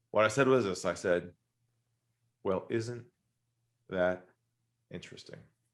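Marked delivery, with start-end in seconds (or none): 2.4-5.3 composed, centered, soft, calm, lowered voice. Retelling their own reply to him, in a lowered voice. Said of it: "I lowered my voice and I said".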